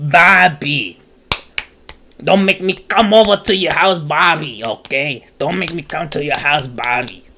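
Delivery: voice like a longtime heavy smoker. Streamer scolding someone over stream lag, sounding like a longtime smoker. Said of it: "You made me sound like a thirty year old smoker".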